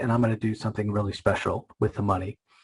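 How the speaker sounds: usual speaking voice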